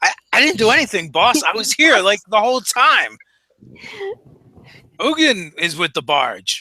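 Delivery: high-pitched creature voice with swooping, swinging pitch. Playing one of the Enochs answering his boss: higher-pitched Enoch voice. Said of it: "you hear one of the higher pitched uh, voices".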